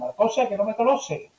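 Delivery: imitated Andalusian accent. Retelling grandmother's carnival joke to grandfather: imitating an andalusian accent. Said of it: "con el acento andaluz dijo".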